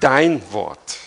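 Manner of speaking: stress on DEIN in dein Wort.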